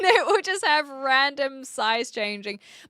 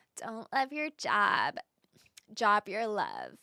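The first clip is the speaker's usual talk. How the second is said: soft reality-star voice with swooping pitch; 3 semitones lower, 7 dB quieter than usual. Demonstrating for a listener how another woman's accent differs, do a Kardashian accent. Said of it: "if you think about a Kardashian, it, let me let me do this for you".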